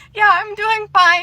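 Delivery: very high voice, near tears. Retelling answering someone who asked if they were okay, retelling a tearful reply. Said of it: "with tears in my eyes".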